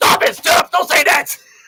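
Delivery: loud, agitated, worked-up delivery. Retelling how a fellow inmate reacted to being named: imitating someone all worked up. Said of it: "he's all worked up".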